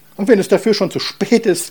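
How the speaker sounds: shrill, very high, very loud shrieking scolding. The mother speaks after learning her daughter Marie is pregnant, shrill scolding. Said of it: "keifte die Mutter".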